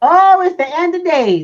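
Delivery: very high, loud, stretched-out shout. Retelling what a lot of people are saying: imitating people shouting. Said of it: "they're shouting".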